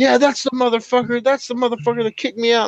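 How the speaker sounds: mild, half-hearted hollering. Retelling a bar story, a man in the street: imitating a man yelling.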